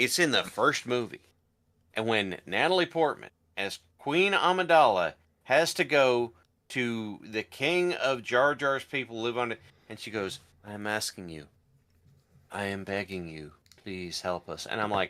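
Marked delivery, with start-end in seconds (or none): 10.6-14.6 put-on monotone, flat, lifeless and disengaged delivery. Retelling a film scene with no direction: imitating Natalie Portman's flat line reading. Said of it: "they gave her no direction, and she does not wanna be there".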